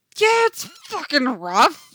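very loud, high yell with the voice breaking. A man replies to a remark about his morning, shouting, voice cracking. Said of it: "he shouts, voice cracking".

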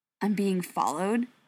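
plain

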